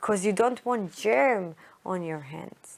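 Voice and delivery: ordinary delivery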